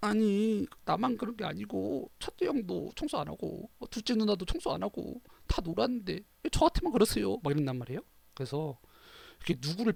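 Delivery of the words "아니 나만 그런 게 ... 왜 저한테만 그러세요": crying, tearful, pleading protest, pitched up. Retelling being scolded as a child, imitating crying while protesting. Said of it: "막 울면서 막".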